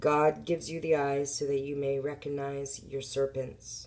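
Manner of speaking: plain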